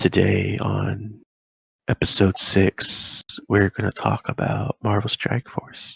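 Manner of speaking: slow, calm, hushed murmur right up on the mic. Podcast host trying out an intro for the next episode, really calm and close to the mic. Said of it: "do like a really calm voice and just just get like really close".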